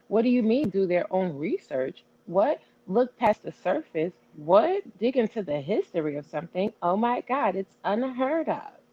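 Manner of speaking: heavy sarcasm with swooping, disbelieving pitch. Answering another speaker's question about research: super sarcastic. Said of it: "I know that's super sarcastic".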